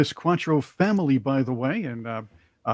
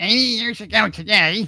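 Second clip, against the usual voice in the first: put-on woman's voice, pitched up; 8 semitones higher than usual. Reading out a woman's post in her voice: imitating a woman's voice. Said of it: "I'll do it in her voice".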